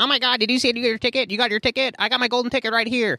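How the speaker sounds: squeaky, very high, irritating put-on kid voice. Describing the kid in Polar Express to a co-host, doing his annoying Know-It-All voice. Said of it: "the one who had like the really annoying voice".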